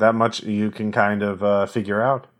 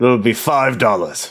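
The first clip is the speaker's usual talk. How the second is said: fake, put-on English accent; 3 dB louder than usual. Narrating a scene and voicing the person handing over a drink, in a fake English accent. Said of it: "totally not fake English accent".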